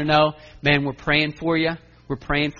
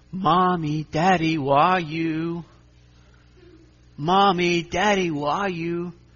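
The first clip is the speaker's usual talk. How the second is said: put-on sweet little child voice, slower; 2 semitones higher than usual. Retelling hearing Zoe call out an hour early, Zoe's sweet little voice. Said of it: "Just this sweet little voice".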